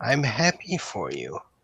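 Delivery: softly spoken. Narrating Sam's reply in the story, very quiet. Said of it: "And he says very quietly".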